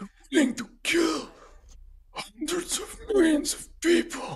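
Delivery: raspy voice pitched way up high. Planning a scene, speaker voices Mbenga facing off with the bad guy, raspy whispery voice. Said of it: "in his whispery voice, super raspy, whispery voice".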